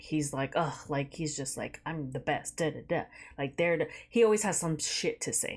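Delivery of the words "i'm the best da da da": normal talking voice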